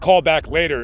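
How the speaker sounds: ordinary talk, nothing marked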